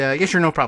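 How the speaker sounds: very fast, sped-up delivery like fast-forward playback. Answering a viewer's question at one and a half speed, sped up to 1.5x speed. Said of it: "We'll answer that at one and a half speed".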